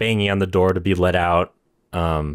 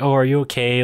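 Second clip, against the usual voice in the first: mock sugary, very sweet-toned voice; 5 semitones higher than usual. Retelling a character comforting a confused old lady, imitating a sweet tone. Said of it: "very sweetly".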